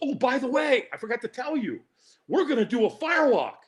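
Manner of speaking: high, eager, enthusiastic phone voice. Retelling the end of a phone call with Dan, imitating Dan's enthusiasm. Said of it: "he said it with this enthusiasm".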